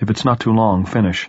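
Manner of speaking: plain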